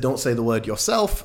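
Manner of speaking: ordinary talk, nothing marked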